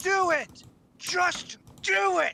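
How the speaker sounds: very high, very slow, urging voice. Explaining an earlier shout to the others: Shia LaBeouf "do it" impression. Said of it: "I was trying to replicate Shia LaBeouf to say".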